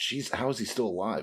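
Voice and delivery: ordinary talk, nothing marked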